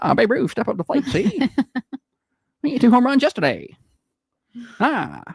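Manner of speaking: put-on old-time radio broadcaster voice. Showing how an old-time baseball broadcaster sounds, old-timey broadcaster voice. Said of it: "Why did they all talk like that".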